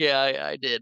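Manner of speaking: put-on crying. Retelling the scene where Hook confronts the pirate Gutless, imitating crying. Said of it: "he kinda starts breaking down and crying".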